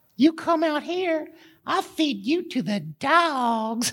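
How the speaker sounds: high voice, light Southern twang, "dogs" stretched out. Retelling David and Goliath as once told to a child, speaking as a high-pitched Goliath. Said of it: "Goliath always had a high voice".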